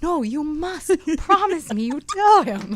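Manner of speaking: very loud, slow, cute put-on Italian accent. Quoting the voice teacher's reply about the lesson, in a cute italian accent. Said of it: "He's Italian, you know, and so he's got this cute accent".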